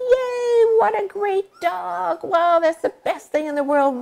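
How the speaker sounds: very high, really happy, gushing voice. Showing how to praise a puppy once it goes outside, in a really happy voice. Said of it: "Really happy voice".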